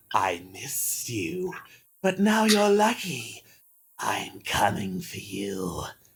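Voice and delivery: hissed delivery. Game master voicing a monster who turns to the player, hissing.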